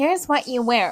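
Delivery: imitated American accent. Complaining about Americans and quoting them, mocking Americans. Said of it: "Americans piss me off because they're like".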